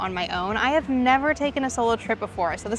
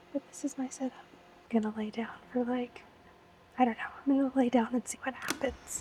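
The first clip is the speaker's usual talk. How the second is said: whispered speech, quieter; 10 dB quieter than usual. Filming in a freakishly quiet hostel room: whispering. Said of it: "you can hear me whispering".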